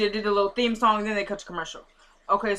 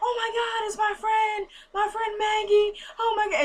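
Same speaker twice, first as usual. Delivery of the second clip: very high-pitched fake crying with put-on distress; 12 semitones higher than usual. Retelling how Veronica fakes crying behind a car, imitating her fake crying. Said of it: "She's crying".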